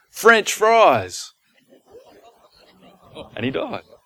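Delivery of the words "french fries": high-pitched, loud, joking yell. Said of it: "as he yells out".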